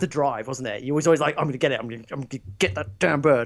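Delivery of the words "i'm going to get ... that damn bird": put-on aggressive tone. Imitating the other speaker's past words while gaming: imitating an aggressive voice. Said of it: "you sound real aggressive there".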